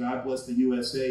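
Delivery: ordinary delivery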